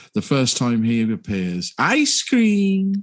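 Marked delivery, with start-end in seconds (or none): 1.8-3.1 very high, spooky, creepy villain voice. Recalling the villain's first appearance in a childhood film: Child Catcher impression. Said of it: "Chitty Chitty Bang Bang and the Child Catcher".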